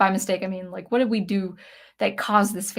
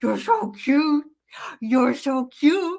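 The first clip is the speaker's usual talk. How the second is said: high, drawn-out voice people use on dogs; 6 semitones higher than usual. Explaining that everyone has dog voices, the speaker demonstrates a dog voice. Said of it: "we all have dog voices".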